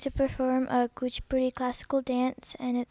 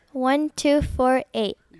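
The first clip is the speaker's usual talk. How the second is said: raised, louder voice; 6 dB louder than usual. Repeating a registration number after being asked again: louder.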